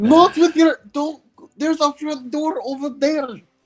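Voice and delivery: very high-pitched, shrill yelling. Playing a character in a tabletop game: yelling in character. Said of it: "I just start yelling".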